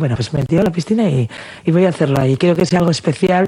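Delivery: plain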